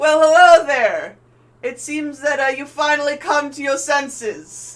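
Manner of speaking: gleeful shout, very high pitched and very loud. Retelling what Feynman yells as the ships get closer, imitating his gleeful yell. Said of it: "he kind of gleefully yells".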